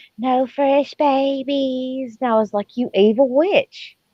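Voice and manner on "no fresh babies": woeful, pitiable little whimpering voice. Recalling what a woman once told her, imitating a pitiful whimper. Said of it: "she said it with the most poor, pitiful".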